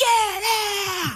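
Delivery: put-on yell. Telling how everyone turned on a man, retelling a yell. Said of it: "I yelled".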